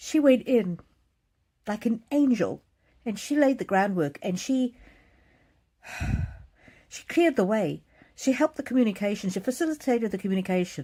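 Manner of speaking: high, choked-up voice on the verge of crying. Recalling what their mother did for the family: on the verge of tears. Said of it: "I'm going to cry now".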